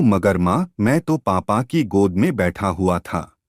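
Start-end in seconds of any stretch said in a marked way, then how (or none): none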